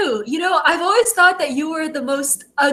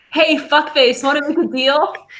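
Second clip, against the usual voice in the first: ordinary talk, nothing marked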